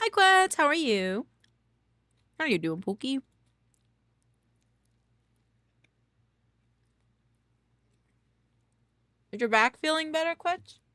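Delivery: mumbled through a mouthful. Greeting someone while eating breakfast, talking with mouth full. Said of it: "Sorry, I don't mean to talk with a mouthful".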